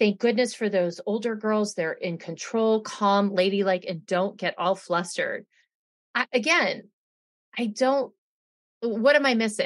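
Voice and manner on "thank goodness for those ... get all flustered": usual speaking voice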